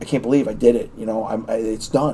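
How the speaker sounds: mock choked-up voice, catching, overcome with emotion. Retelling a phone call home after passing: retelling being choked up. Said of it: "choked up on the phone".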